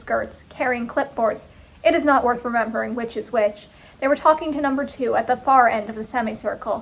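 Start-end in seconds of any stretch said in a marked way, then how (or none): none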